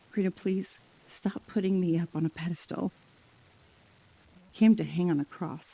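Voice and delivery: softly spoken. Quoting what Jesus says to the speaker: speaking softly as Jesus. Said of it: "Jesus just says softly to me".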